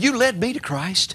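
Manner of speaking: put-on broken, cracking voice. Retelling a father's words on the phone: imitating a broken voice. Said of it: "My dad on the phone with a broken voice".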